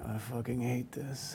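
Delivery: acted mutter under the breath. Photographer retelling a star muttering during a shoot, retelling a mutter under breath. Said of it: "I could hear him under his breath saying".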